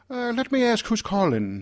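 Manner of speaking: imitated Irish accent. Retelling a phone call to an assistant: imitating Peggy Medina's Irish accent. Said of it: "has a, an Irish accent".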